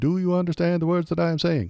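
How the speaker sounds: affected Indian accent. Pitching a joke buddy cop movie line: Kash Patel in Indian accent. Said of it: "in an Indian accent".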